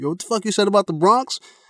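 mock high-pitched screaming. Retelling how a guy screamed back at an attacking vampire; retelling a scream. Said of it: "that dude screamed".

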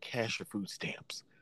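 secretive, hushed, breathy aside whisper. Retelling what a lady in a store said to mom: imitating a whisper. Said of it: "this lady whispers over to my mom".

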